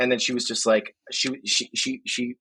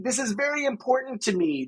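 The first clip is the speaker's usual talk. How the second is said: mock dramatic pleading kid voice, pitched higher; 10 semitones higher, 3 dB quieter than usual. Retelling a kid's sudden plea: imitating a dramatic kid. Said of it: "the drama is really intense".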